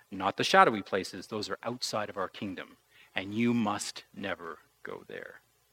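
low, hushed and stern voice. Retelling the story, Mufasa speaks to little Simba: mock-stern Mufasa voice. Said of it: "Mufasa says very sternly to little Simba".

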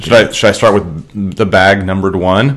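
normal talking voice

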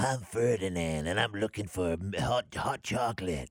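strange husky puppet voice. Imitating a marionette's voiceover from a video: strange husky Ferdinand voice. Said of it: "the voiceover in a very strange husky voice".

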